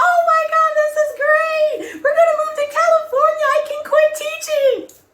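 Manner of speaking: very high, loud thrilled shriek. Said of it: "My mother was excited".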